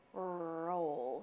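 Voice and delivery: "scroll" slow, each sound stretched. Modeling a word for viewers to repeat: said slowly. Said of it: "say it slow".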